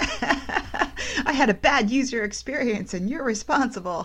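laughing through a high mock complaining tone.

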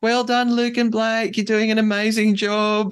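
put-on very high screamed cheer. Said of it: "Annabelle just screams to them".

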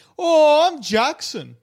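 very high, one-size-fits-all guy voice. Show the one voice you use for anyone in the company, as a Jackson impression. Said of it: "I do the same fucking voice for any person".

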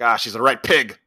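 put-on heavy Scottish accent. Retelling a scene from a story, doing a character in a thick Scottish accent. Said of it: "got this thick Scottish accent".

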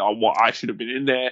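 normal talking voice

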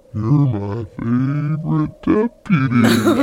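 creepy toy voice, very low and very slow. Recalling the toy speaking to them in the night, in a slow, deep toy voice. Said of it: "it talks slowly and more deeply".

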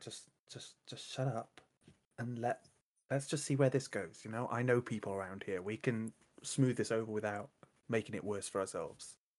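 hushed, whispered in-character aside. Whispering to the others in character to stay quiet: whispering in character. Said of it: "I'm just gonna join in and whisper".

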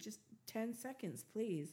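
plain

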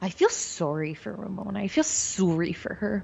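put-on Canadian accent, calm, relaxed and sorrowful. Retelling what a castmate said, imitating her Canadian accent. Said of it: "Is that your Canadian accent?".

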